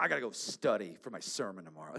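acted-out angry, low voice, cutting words short. Back home after putting the kids to bed, retelling an angry line. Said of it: "with anger in my voice".

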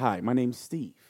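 put-on polite voice. Retelling how a stranger greeted a friend while stretching: imitating Steve, very polite. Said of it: "He's very polite".

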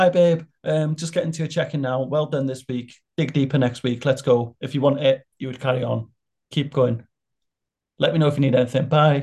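quick, breezy, casual voice. Retelling a coach's voice note: imitating the coach's voice note. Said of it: "sounded a bit like this".

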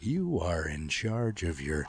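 slow, calm, hypnotic trance-tape voice.

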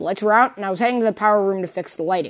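ordinary delivery

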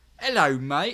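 very loud, high put-on British accent, bunny voice. Listing characters one could play, putting on a british bunny character voice. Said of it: "Bunny from Britain".

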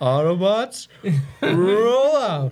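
shrill, very high, very loud shout, drawn-out rolled r. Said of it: "that deep voice that's really weird and awful".

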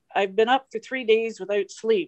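usual speaking voice

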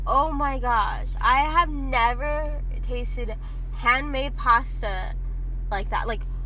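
slow, drawn-out, awed and rapturous raving.

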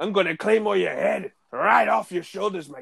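rough, creaky, raspy wrestler promo voice. Doing an impression of a wrestler taunting his rivals: Drew McIntyre impression. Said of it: "do the Drew McIntyre impersonation".

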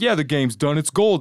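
put-on loud New Jersey wiseguy accent. Speaker imitating a guy describing his game, in a New Jersey accent impression. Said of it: "sounds like he's from New Jersey".

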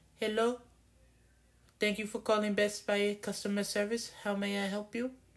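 very high-pitched put-on Indian accent. Retelling a call to customer service, the speaker imitates the agent in an Indian accent. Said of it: "I'm going to have to do the voice".

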